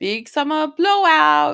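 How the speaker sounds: put-on thick, heavily laid-on Swedish accent. Comparing how a voice sounds, the speaker quotes a Frozen shopkeeper voice. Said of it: "the shopkeeper in Frozen who's like".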